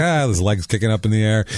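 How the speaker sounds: ordinary talk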